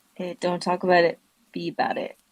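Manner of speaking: very high, smooth streamer catchphrase delivery. Doing an imitation the others asked for: Dre Millie imitation. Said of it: "let's hear the Dre Millie imitation".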